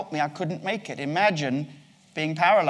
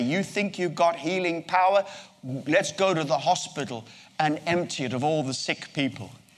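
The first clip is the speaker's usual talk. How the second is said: plain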